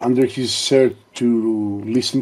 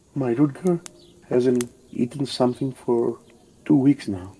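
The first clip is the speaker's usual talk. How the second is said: very soft, faint voice, broken and cracking; 5 dB quieter than usual. Voicing a worried mother telling a doctor about her son: very soft, broken voice. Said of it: "in a very soft and broken voice".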